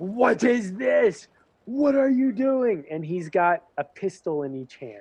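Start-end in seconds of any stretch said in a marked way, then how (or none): 0.1-2.8 furious, high-pitched commander-style yelling. Voicing a captain who appears in the square: yelling angrily. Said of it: "he's yelling".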